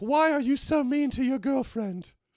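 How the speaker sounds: bad English accent, pitched very high. Mocking every Louis Theroux documentary, doing a bad Louis Theroux impression. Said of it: "Bad English accent".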